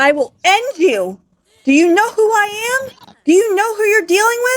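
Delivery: very high, climbing, threatening shouting. Retelling a show scene where the queen threatens the maid: imitating someone yelling. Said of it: "Why is everyone yelling?".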